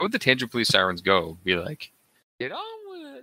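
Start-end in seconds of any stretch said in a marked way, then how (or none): 2.4-3.2 high, soft squeaking voice. Imagining how the tangent police sirens would say it: Mickey Mouse voice. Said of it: "Sounds like Mickey Mouse saying".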